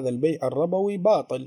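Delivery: plain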